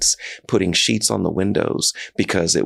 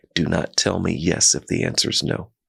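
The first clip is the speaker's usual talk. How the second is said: put-on whisper. Retelling what the COO whispered in a meeting: retelling a whisper. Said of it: "she whispered to me".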